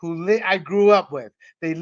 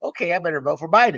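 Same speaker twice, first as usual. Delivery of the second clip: heavily sarcastic, mock sheep-like dutiful compliance. Mocking voters who obeyed a quoted remark: sarcastic imitation of voters. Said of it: "I'm being sarcastic".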